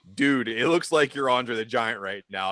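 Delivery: ordinary talk, nothing marked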